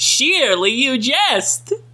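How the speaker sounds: high cartoon mascot voice. Reading Bubsy game lines aloud, in a Bubsy voice. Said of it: "I don't know what voice I'm doing".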